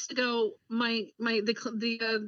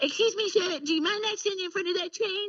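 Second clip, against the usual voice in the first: high, put-on cartoon kid voice. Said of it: "when I try to tell people".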